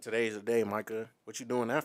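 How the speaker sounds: ordinary talk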